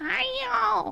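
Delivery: name stretched out very high and shrill. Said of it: "the way she says".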